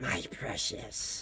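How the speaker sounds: very quiet, breathy, barely voiced whisper. Trying to remember how Gollum sounded: Gollum voice. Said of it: "Gollum was like that".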